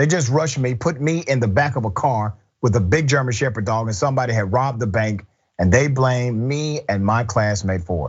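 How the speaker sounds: ordinary delivery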